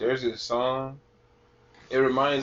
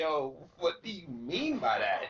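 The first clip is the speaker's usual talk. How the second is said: ordinary delivery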